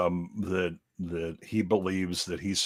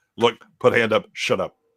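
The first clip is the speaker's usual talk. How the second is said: put-on dead serious tone, louder; 3 semitones higher, 6 dB louder than usual. Retelling how a man in a clip silenced a screaming woman: imitating a dead serious warning. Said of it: "that dead serious".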